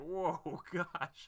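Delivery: high, laughing cackle.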